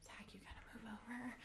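urgent, pleading whisper.

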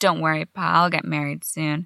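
ordinary talk, nothing marked

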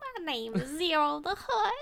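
high, put-on alien character voice. Teased on the show, the speaker introduces herself in a Ziro the Hutt impression. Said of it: "You wouldn't have that good of an impression".

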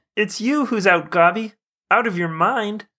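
very high-pitched puppet cartoon frog voice. Quoting a Spider-Man line to a villain: Spider-Man quote sounding like Kermit the Frog. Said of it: "He just turns into Kermit the Frog".

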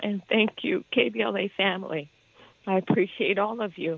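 tearful, happy, grateful voice through tears. Thanking the KBLA family at a celebration of the speaker's solo return, crying with happiness. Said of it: "I'm crying because I am happy and I am so grateful".

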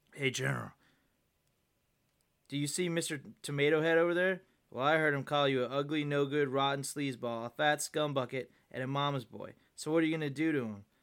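plain

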